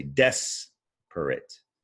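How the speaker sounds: stress on first syllable des of desperate. Teaching word stress to learners, saying desperate with stress on the first syllable. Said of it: "You stress that first syllable".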